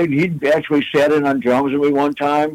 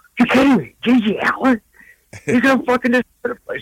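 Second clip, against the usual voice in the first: put-on panicky freak-out, very high, rushed; 9 semitones higher than usual. Retelling the girlfriend hearing who's coming up: imitating someone freaking out. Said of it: "she's, like, freaking out".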